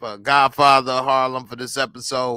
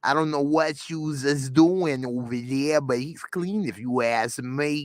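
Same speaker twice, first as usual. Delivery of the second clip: put-on New York accent; 4 dB quieter than usual. Retelling what a woman said when asked about him, imitating her New York accent. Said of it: "She got a New York accent".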